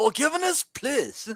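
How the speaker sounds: very high, squeaky cartoon gangster voice. Comparing a boxer's apology to a cartoon scene: Simpsons Yakuza guy voice. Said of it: "Yakuza guy got knocked through the window on The Simpsons".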